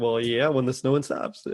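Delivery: mock sarcastic tone in a put-on male voice. Retelling a film phone scene, imitating a sarcastic guy on the other line. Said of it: "a sarcastic guy on the other line".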